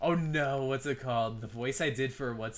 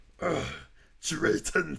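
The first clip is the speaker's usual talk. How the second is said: put-on growling monster voice, higher; 4 semitones higher, 3 dB louder than usual. Retelling a stream moment when a character freaked out: Venom voice. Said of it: "my Venom voice".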